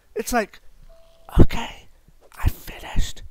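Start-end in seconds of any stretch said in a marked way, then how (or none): 1.4-3.3 raised, projected voice. Retelling a drive-thru order, imitating a customer speaking very softly. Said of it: "They speak as softly as possible".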